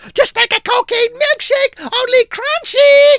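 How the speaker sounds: screeching, very high, shrill, loud monkey voice. Narrator reading a monkey attacking with nunchucks: Coco screeching.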